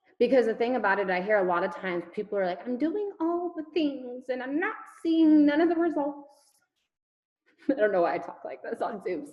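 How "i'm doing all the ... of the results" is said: fake, off-target British accent, pitched up. On a Zoom, quoting what people often say, in a bad British accent. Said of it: "I sound like a bad British person".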